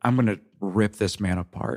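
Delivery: low, under-the-breath muttered aside. Retelling what a man said to him about someone absent: muttering under his breath. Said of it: "kind of under his breath".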